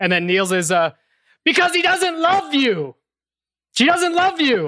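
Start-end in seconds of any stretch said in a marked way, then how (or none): 1.4-4.7 very high, blunt, acted-out yell, shouted outright. Retelling how an actor delivered a plot line: imitating someone yelling. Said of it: "He just yells it".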